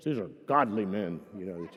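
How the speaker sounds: very low, deep, pulpit-style preacher voice. Retelling what a man said about his men, imitating his preacher voice. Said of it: "He gave me that kind of preacher voice".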